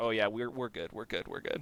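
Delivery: imitated stone-faced delivery. Retelling a player's reply during a tense card game: imitating a stone-faced reply. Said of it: "Logan's just stone facing it".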